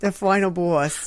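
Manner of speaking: strong New Jersey accent. Asked to say a phrase again the way they first did, Jersey accent. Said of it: "There it is".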